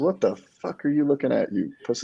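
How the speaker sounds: put-on high, screamed swearing. Retelling a stranger at the gym cursing at him: imitating someone screaming. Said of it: "just starts cursing and screaming".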